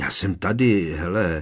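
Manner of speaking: ordinary talk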